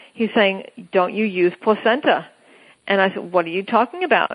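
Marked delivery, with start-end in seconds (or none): 0.9-2.3 imitated Chinese accent. Retelling what the man at the store asked, in a put-on Chinese accent. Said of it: "And in his Chinese accent".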